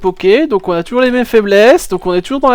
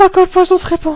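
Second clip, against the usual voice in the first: man doing a put-on female voice; 9 semitones higher than usual. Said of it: "une voix d'un homme qui imite une femme".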